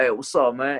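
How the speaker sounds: put-on New York Bronx accent. Retelling meeting the gm, a big guy from new york, in a bronx accent. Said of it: "like this Bronx accent".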